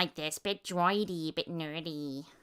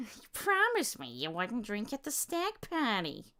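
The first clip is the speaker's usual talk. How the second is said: high-pitched, swooping character voice with wide swings; 6 semitones higher than usual. Doing a character voice, speak to Peter about his promise, sounding a bit like Fran Drescher. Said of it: "sounding a bit more like Fran Drescher".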